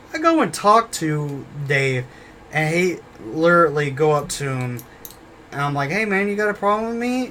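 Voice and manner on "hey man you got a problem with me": nice, easygoing, friendly, light pitched-up tone. Retelling going up to another man to talk, retelling in a nice tone. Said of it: "In a nice tone".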